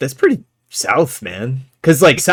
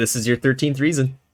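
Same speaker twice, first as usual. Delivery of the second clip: normal talking voice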